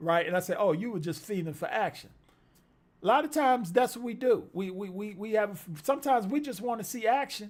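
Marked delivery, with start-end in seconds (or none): none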